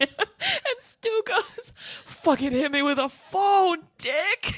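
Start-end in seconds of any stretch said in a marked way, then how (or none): 2.1-4.6 put-on dramatic dying-man movie voice. Retelling a movie scene where a man on the ground is hit with a phone; imitating Stu's gut-wrenching line. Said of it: "it's like gut-wrenching the way he says it".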